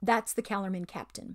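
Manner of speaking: plain reading voice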